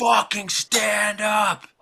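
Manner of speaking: mock big jock, high, angry yell. Retelling how a big jock from the next section yelled at the speaker, imitating someone yelling. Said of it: "they're like yelling at me".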